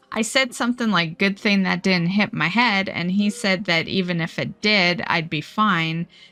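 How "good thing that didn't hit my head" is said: normal talking voice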